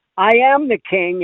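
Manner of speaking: smooth, honeyed, mellifluous high soprano tone, floating up. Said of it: "in a high mellif-, mellifluous, mellifluous soprano".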